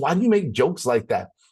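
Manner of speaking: quick, very sweet-sounding tone. Speaker quoting his wife's reply to his jokes, imitating a sweet tone. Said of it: "she says it in a way that's like, that's like really sweet".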